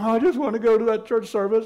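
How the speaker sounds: play-acted tearful, weepy sobbing. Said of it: "and cried".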